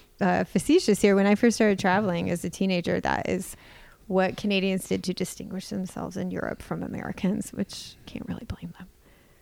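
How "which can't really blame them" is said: much quieter, under the breath. Speaker slips in an aside while telling a travel story, said quietly. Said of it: "I said that quietly".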